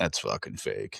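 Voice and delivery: whispered, breathy, dumb gym-bro voice. Speaker voices the bro in the back of his brain: inner bro voice. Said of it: "the bro comes out and he goes".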